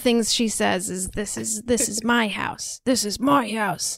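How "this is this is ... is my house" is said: put-on sleepy, heated arguing tone. Retelling a girl arguing with herself in her sleep: imitating someone sleep-arguing. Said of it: "sleep arguing and doing voices to herself".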